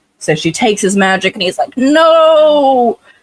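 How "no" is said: very high, long drawn-out villain cry. Retelling how the villain reacts to losing his magic: Disney villain style cry. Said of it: "Disney villain style".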